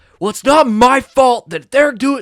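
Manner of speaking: shrill, very high-pitched, very loud yelling. Retelling a student's outburst in class: imitating a student yelling. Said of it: "she yelled something".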